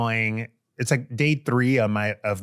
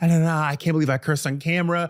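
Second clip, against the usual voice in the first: high, tearful, put-on crying voice; 6 semitones higher than usual. Retelling a phone call from someone who was crying: imitating someone crying. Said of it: "She's crying".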